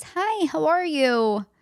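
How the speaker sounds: very slow, high, drawn-out phony phone voice. Showing the voice put on when phoning an acquaintance: phony phone greeting voice. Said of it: "do this with my voice ... No phony".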